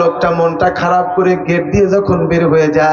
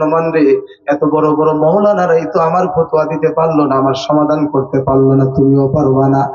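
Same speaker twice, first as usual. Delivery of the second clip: usual speaking voice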